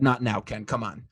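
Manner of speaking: mock sarcastic delivery. Retelling a reply posted on Twitter to a joke about covid: imitating own sarcastic reply. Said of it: "I sarcastically said".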